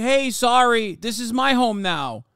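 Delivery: put-on, slow, drawn-out New York Brooklyn accent. Mocking settlers from Long Island taking a home: imitating a Brooklyn accent. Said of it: "Motherfuckers with a Brooklyn accent like".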